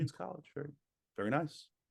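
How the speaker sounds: acted limp, unimpressed politeness. Imitating an older person hearing which college a child attends: imitating a passive, disappointed "very nice". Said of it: "in, like, a fairly passive way".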